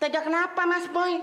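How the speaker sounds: squeaky, indignant, high-pitched voice.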